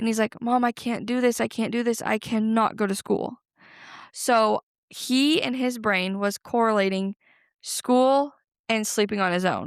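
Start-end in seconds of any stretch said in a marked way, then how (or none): 0.4-3.4 put-on bawling, sobbing child voice. Retelling a child at bedtime saying he can't go to school: imitating a bawling child. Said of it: "he starts bawling".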